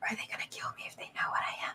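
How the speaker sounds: barely audible, very quiet, breathy whisper. A character hugs you and hides her face in your neck: whispering. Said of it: "she's also gonna whisper".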